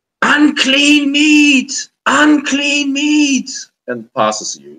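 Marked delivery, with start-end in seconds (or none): 0.2-3.5 very high-pitched screaming shriek. Voicing a wild-looking woman in the water: screaming woman. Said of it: "she's screaming".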